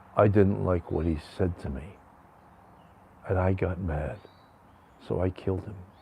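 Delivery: put-on dead-level low monotone, coldly matter-of-fact. Act out a killer answering why he killed a man, imitating a killer's matter-of-fact monotone.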